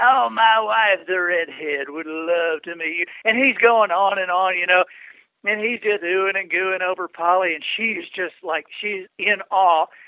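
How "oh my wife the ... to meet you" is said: put-on enthusiastic southern speaker voice, louder. Retelling meeting Zig Ziglar as he greets the couple: Zig Ziglar impression. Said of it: "That was, I just heard".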